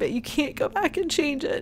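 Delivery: on the verge of tears. A mother speaking to other moms out there, teary-eyed. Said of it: "I'm sorry I get teary-eyed".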